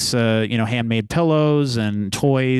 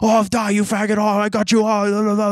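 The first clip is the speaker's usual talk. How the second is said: put-on very high, childish, shrieking, taunting screams; 10 semitones higher than usual. Imitating online players screaming at each other: imitating gamers screaming. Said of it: "grown adults screaming like kids at each other".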